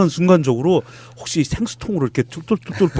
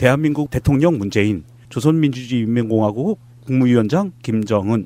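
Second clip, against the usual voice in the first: ordinary delivery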